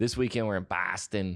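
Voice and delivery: put-on Boston accent. Listing where they will be on upcoming weekends, doing each city's accent, Boston accent. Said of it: "I'm going to do the accent of all these cities".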